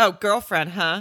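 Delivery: mock, snide, teasing, weird tone. Retelling what a man from the bushes said: imitating a mocking tone. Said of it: "so weird and mocking".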